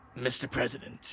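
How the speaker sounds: low quiet villain voice. Recapping the ending of MGS two, doing an Ocelot impression. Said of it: "V- very good Ocelot".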